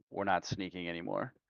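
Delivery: hushed, whispered word said in passing. In a role-play scene, walking past Dartmouth and whispering to him. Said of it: "and whisper to him".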